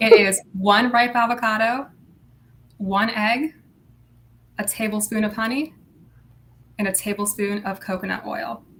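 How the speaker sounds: carefully slowed-down delivery. Repeating the mask ingredients a listener asked for: speaking slower. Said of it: "I'll go over it and I'll speak slower".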